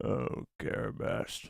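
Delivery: put-on very low voice. Taking turns trying a character's exclamation, imitating a very low voice. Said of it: "It's very low".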